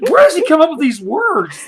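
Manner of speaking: high, loud, fast mock outraged rant.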